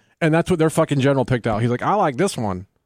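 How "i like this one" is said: put-on American Southern accent. Retelling what a foreign general said picking out military gear, southern accent impression. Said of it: "Is that the accent he had?".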